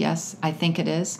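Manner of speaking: normal talking voice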